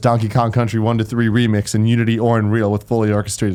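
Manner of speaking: ordinary talk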